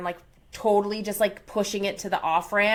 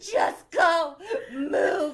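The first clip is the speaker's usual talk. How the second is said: put-on sobbing, pitched higher; 8 semitones higher than usual. Retelling waving cars past while stuck on the off-ramp: retelling own crying. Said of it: "I'm bawling my eyes out".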